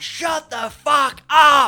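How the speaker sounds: very loud, very high, shrill, drawn-out furious scream. Retell your outburst at people talking halfway through a movie, retelling a scream. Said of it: "I just screamed out".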